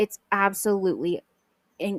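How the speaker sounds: stuttering, stammering and tripping over words. Telling the audience about a big moment in music history, stuttering. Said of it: "I'm stuttering because it's such a big deal".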